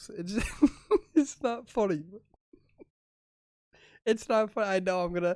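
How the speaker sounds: talking through laughter. Trying to tell a dad joke, laughing while talking. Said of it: "I'm laughing so much".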